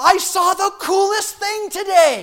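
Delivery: put-on high, loud, slowed-down, excited kid voice.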